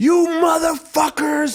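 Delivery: put-on shrill, very high, enraged scream. Recalling losing his tapes, the speaker retells screaming at the people who took them. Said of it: "And I was screaming".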